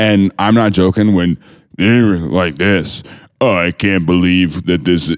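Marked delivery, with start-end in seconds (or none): 3.4-5.1 put-on advertisement voice, much deeper. Retelling an ad from someone comparing prices at Walmart, in a put-on deepened ad voice. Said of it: "I'm going to make my voice deeper for this ad".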